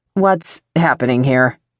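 sharp, curt, businesslike, no-nonsense snapped tone. A woman speaks to the male guards behind the narrator: snapping, no-nonsense. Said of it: "she snaps in a no-nonsense voice".

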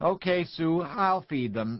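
calling out. A father holding his crying daughter answers the woman calling him, calling out. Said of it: "Sanders called".

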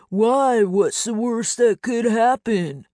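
mocking, high-pitched, taunting tone. A man, blaming Leo for touching it, mocks Leo's voice. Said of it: "Mocking Leo's voice".

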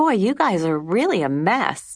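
light, easygoing tone. Narrator voicing Liz, turning to the unhappy faces in the back seat, reaching for a light tone. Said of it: "She reached for a light tone".

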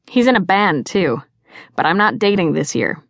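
ordinary delivery

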